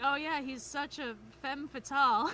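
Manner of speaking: normal talking voice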